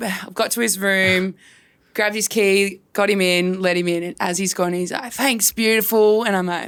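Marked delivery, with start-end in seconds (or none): 5.1-6.2 put-on slurred speech. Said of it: "slurring his words".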